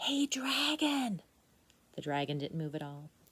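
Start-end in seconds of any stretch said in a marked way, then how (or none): 0.0-1.2 very soft whisper, higher pitch. The narrator reads Elizabeth calling to the sleeping dragon, whispering very softly. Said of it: "Elizabeth whispered very softly".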